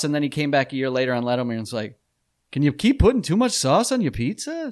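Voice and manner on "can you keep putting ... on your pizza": put-on very high, swooping pitch, slight German accent. Retelling a comedian's later joke on Letterman, Seinfeld impression with German tinge. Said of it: "I don't know why I gave him that inflection".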